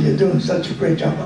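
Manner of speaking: ordinary delivery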